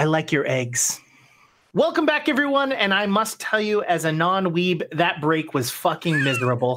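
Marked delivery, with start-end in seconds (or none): 0.0-1.0 hushed whisper. Telling a story, answering the devil who whispered first, in a whisper. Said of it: "I look at the devil and I whisper".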